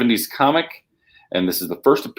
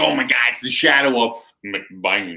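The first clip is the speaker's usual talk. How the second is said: fake country drawl, put-on country voice. Showing how to say mcbain every time, demonstrate it in a country accent. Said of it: "you gotta say in a country voice".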